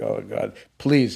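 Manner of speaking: anxious, nervous, small pleading tone. Retelling everybody going quiet watching the TV: imitating own nervous plea. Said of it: "I'm counting the seconds till this ends".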